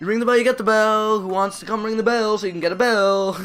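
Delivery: high, shrill, loud, pushy, desperate car-salesman voice. Urging viewers to ring the bell, in a desperate car salesman voice. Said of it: "Sounds like a car salesman".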